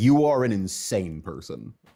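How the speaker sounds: ordinary talk, nothing marked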